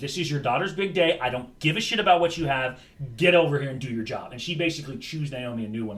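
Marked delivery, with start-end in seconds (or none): none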